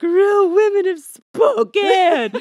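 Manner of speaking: shrill, booming, drawn-out sobbing exclamation. Retelling own reaction on live television: reenacting a sobbing exclamation. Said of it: "and I'm just sobbing, and I'm like".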